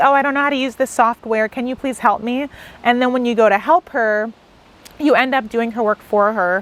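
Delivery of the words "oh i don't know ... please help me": normal talking voice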